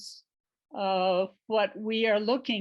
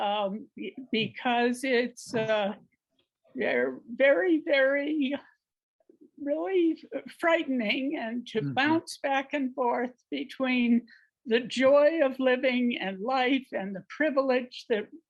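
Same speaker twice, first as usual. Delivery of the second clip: quavering, unsteady, shaking, trembling voice; 4 semitones higher than usual. Sharing in a circle about frightening times, shaking voice. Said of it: "you can hear my voice is shaking".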